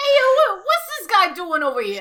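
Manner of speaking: New Jersey Italian guy voice. Describing a scene with Joey, doing Joey in a Jersey Italian accent. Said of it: "Jersey Italian".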